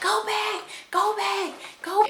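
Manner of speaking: play-acted very high, stretched-out yelling cry. Retelling missing the hospital entrance during labor: retelling her own yell. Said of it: "I'm yelling".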